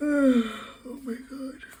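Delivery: high yawn, words stretched, drawn-out oh. Speaker interrupts their own remarks, yawning. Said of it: "Why am I yawning?".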